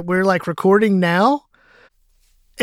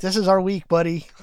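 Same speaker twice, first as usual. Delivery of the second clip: usual speaking voice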